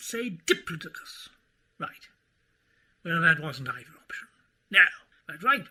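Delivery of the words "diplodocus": stress on first syllable di in diplodocus. Giving an answer on pronunciation: Diplodocus, stress on first syllable. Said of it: "putting the stress on the first vowel".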